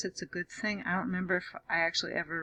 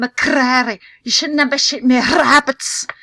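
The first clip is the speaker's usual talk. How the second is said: very loud, put-on Scottish accent; 6 semitones higher, 18 dB louder than usual. Trying out a Scottish accent on a quoted line: Scottish accent. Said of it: "I did better than I thought I could".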